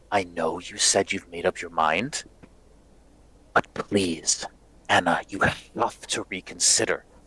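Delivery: speaking in a hush. Narrating Dimitri pleading with Anna as they huddle close, in a hushed voice. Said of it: "speak with these like hushed voices".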